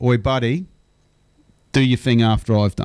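mock blunt, direct and playful tone. Retelling how a speaker on stage told a loud spruiker to wait: imitating a direct, playful call-out. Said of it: "very directly, but in a fun way, went".

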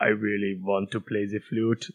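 put-on robotic voice. Joking about Alien Covenant, in a Michael Fassbender robot voice. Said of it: "That's my robot voice".

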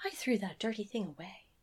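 prim, perfectly proper housewife voice. Retelling a film scene, quoting the mum: imitating a proper Stepford wife. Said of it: "Like a, like a proper Stepford wife".

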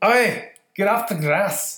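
put-on high-pitched Scottish accent. Asked to try a Simpsons character voice: attempted Groundskeeper Willie impression. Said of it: "I can't do Willie will get you".

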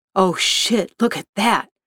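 ordinary delivery

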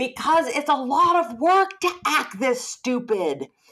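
high, slow yell at the top of her lungs. Retelling an audience member's answer from the back of a ballroom: imitating a woman yelling. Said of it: "she yelled kind of at the top of her lungs".

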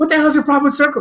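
mock exasperated voice. Retelling own outburst at a man trying to explain: retelling losing it. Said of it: "I was like at wit's end that I lost my shit".

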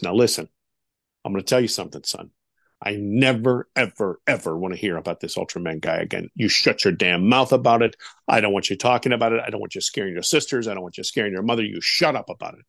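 very low, hard-stressed, emphatic fatherly tone. Retelling what his dad said on arriving home, imitating dad's low emphatic voice. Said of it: "The timbre is very low and he's very emphatic".

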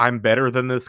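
plain

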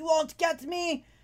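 high, drawn-out shouted yell. Voicing a sergeant yelling to whoever is in the house: sergeant yelling. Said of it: "you hear him yelling to whoever's".

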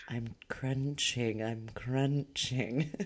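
very slow, soft, drawn-out asmr half-whisper. Imitating an ASMR lady crunching pickles: imitating an ASMR half-whisper. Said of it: "A S M R lady".

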